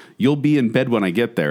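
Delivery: normal talking voice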